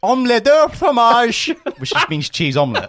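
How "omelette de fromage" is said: put-on shrill, loud, belted, terrible French accent. Retelling an order that echoed around a french theme park, in a bad french accent. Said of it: "the shittest French English border accent you've ever heard".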